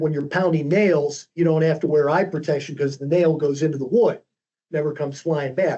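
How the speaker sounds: normal talking voice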